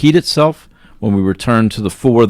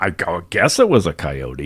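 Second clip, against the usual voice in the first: put-on amused, half-laughing through the words; 3 semitones lower, 5 dB quieter than usual. Retelling what the brother said about the monster, imitating someone laughing while talking. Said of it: "he was kinda laughing at me".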